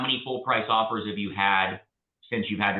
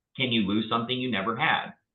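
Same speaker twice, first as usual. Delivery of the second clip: normal talking voice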